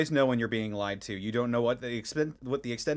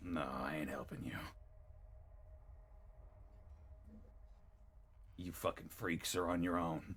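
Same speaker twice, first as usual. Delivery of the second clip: very quiet whisper through a clenched jaw; 6 semitones lower, 16 dB quieter than usual. Voicing a captive refusing to help the players: through gritted teeth. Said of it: "sort of grits his teeth".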